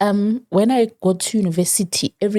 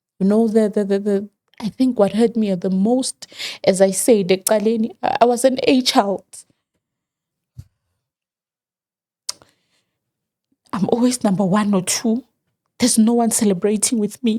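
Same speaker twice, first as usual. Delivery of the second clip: deeply emotional, slower. Recalling a largely absent father and uncelebrated school success, very emotional. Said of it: "I'm going to be very emotional today".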